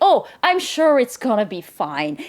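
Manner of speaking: put-on breezy, self-assured tone, loud and slow. Retelling how Daniel brushes off the danger: imitating Daniel's confident tone.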